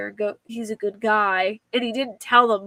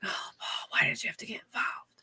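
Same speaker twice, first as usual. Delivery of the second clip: breathy whisper, as if to oneself; 11 dB quieter than usual. Quoting a man who whispered to himself, retelling a whisper to himself. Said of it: "Like he whispers it to himself".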